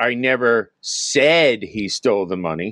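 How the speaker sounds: "said" lifted and stressed.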